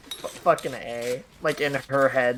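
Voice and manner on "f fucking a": ordinary talk, nothing marked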